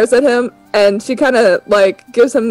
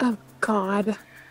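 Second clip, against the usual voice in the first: barely audible, very quiet, annoyed exasperated sigh; 13 dB quieter than usual. Voicing Kisa as she rolls her eyes: eye-rolling exasperation. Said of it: "Kisa rolls her eyes and she goes".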